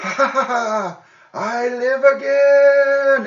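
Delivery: very high, loud, slow, drawn-out shrill creature voice. Narrating a story, the speaker voices a creature in a high-pitched voice. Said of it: "in a kind of high-pitched voice".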